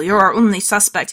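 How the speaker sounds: ordinary delivery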